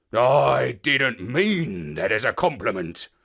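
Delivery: low, bristling, growled delivery. A dog answers the narrator's remark, growled. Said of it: "he growled".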